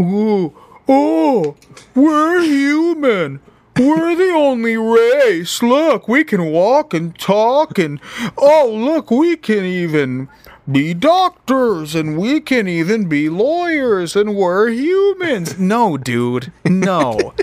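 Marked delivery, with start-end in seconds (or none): 0.0-15.6 very high, slow, drawn-out, smug mocking voice. Mocking people who think humans are the only life: mocking impression of humans. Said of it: "I like your impression".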